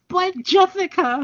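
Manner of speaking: very high, cartoonish rabbit voice, imitated. Retelling a story, the speaker slips into a Roger Rabbit impression. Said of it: "my Roger Rabbit impression".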